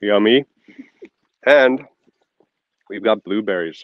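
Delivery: talking with mouth full of food. Speaker eats an almond while talking about bees, talking with mouth full. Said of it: "I gotta eat my almond first".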